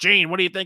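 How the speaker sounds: mock forced, reluctant tone, sounding under duress. Mocking a sportscaster who asks Gene for his view: imitating Tony, sounding forced. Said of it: "Like he's being forced".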